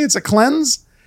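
uptalk, cleanse lifted with a rising tune. Imitating how young people in L A say it: imitating question-like uptalk. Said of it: "They say it as a question".

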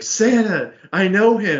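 mock high, thrilled burst of delighted excitement. Retelling a scene where Buddy hears Santa is coming, mock-excited Buddy voice. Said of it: "He gets so excited there".

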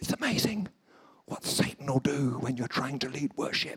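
soft, winded, breathless, out-of-breath voice. Retelling what a worship leader said after his trousers fell down, imitating a breathless voice. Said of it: "with that breathless voice".

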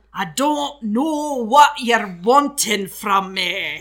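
very loud, clumsy, bad put-on Scottish accent. Asked on the spot to do a Scottish accent, answering in a bad Scottish accent. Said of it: "make [name] do a Scottish accent".

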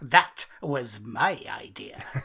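very slow, deliberate, every word drawn out. Saying what to claim on the page: Bob Mortimer impression. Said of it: "I'm saying it just like, um, Vic and Bob, Bob Mortimer".

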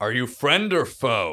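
acted, loud, hailing call, yelling out. Voicing a character calling out to approaching riders: yelling out in character. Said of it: "I wanna yell out to them".

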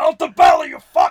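shrill, very loud, high random outburst. Retelling Al Pacino in the kitchen: imitating Al Pacino shouting. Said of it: "randomly shouting".

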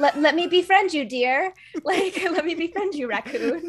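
high-pitched, sweet fairytale heroine voice. Pretending to greet a deer: mock Disney princess voice. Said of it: "I am a Disney princess".

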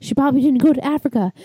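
high, fast, excited, worked-up rattling speech.

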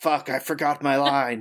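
quiet muttering under the breath. As a shotgun cocks, Doug curses, muttering under his breath. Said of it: "say under his breath".

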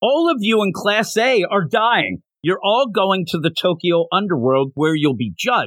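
acted, held-in-check, mild half-yell. Retelling what a character yells at his class: imitating a character yelling. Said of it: "because he's just yelling".

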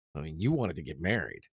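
plain, really matter-of-fact, no-fuss delivery. Retelling a movie scene where he leans back: imitating a matter-of-fact tone. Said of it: "in this really matter-of-fact way goes".

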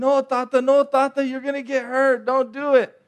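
put-on high-pitched yell of a little boy. Retelling begging from a pool as a child, retelling own yelling. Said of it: "I was yelling".

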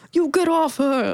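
bad Brooklyn tough-guy accent. Retelling the scene where Tony storms into the kitchen, bad Brooklyn accent as Tony. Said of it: "that was a terrible Brooklyn accent".

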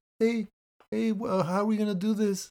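put-on meek, timid voice. Mocking how an actor talks in interviews: imitating Tom Holland sounding weenie. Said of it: "You don't have to be all weenie".

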